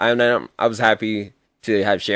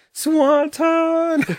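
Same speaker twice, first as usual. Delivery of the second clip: put-on very high-pitched, shrill scream; 4 dB louder than usual. Retelling how he screamed when Jeff went for the Swanton: retelling a scream. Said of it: "he screamed".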